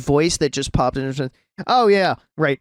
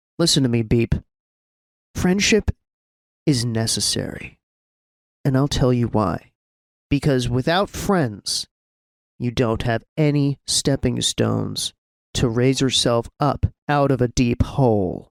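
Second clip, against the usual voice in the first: whispering in a character voice; 5 semitones lower than usual. Voicing a kneeling character, hand on another's shoulder: whispering in character. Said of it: "he's gonna whisper to Beam".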